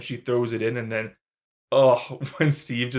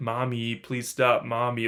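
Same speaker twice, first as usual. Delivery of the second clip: put-on childlike begging voice, slower. Describing a horror scene where Peter begs his mother, imitating a child begging. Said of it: "Like he's begging her to stop".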